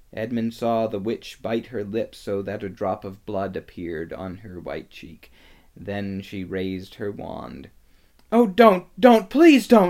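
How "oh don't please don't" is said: very high, shrill, very loud yell. Narrator reads a boy as the witch raises her wand: shouting. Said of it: "shouted Edmund".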